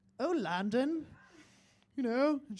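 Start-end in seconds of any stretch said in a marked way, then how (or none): 0.2-1.1 put-on short, raised, pitched-up British accent. Retelling answering a cashier's question: british accent. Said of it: "applied in a British accent".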